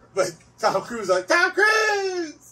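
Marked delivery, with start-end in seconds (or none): 1.3-2.3 mock screaming, higher and louder. Imitating a cartoon character who screams his own name: imitating a cartoon character screaming. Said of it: "So he's just screaming out his own name?".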